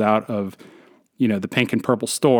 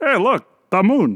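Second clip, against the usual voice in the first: high, poor, put-on Polish accent; 10 semitones higher than usual. Joking about names for the moon, the speaker imitates Polish people in a bad Polish accent. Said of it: "It's not a good Polish impression".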